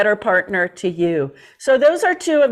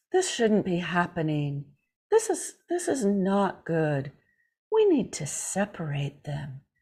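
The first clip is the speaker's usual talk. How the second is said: put-on soft whisper, lower and quieter; 5 semitones lower, 10 dB quieter than usual. Retelling how an uncle figure handled the bullying: imitating a soft whisper. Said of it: "he'd whisper and talk softly".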